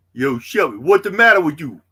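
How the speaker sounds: put-on loud New York accent. Hosting a stream with likes and giveaways, a host breaks into new york accent. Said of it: "my New York accent's getting better".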